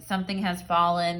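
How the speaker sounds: normal talking voice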